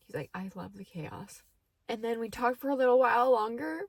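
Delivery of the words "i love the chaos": softest, very quiet, hushed murmur. Recounting what he said to her during their talk, in a very quiet voice. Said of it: "in like the most like quiet voice I've ever heard him".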